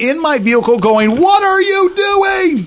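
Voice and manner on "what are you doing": put-on very high, stretched-out, drawn-out yelling. Complaining about drivers who won't merge, the speaker retells their own yelling in the car. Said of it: "and I'm yelling it".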